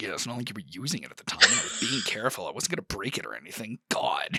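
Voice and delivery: low grumbling mutter under the breath. Voicing a character complaining after a cup is taken: muttering under her breath. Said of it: "under her breath".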